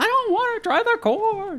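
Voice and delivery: very high, drawn-out sitcom-style delivery. Acting out a Seinfeld scene: Jerry Seinfeld impression. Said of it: "It's a very good Seinfeld impression".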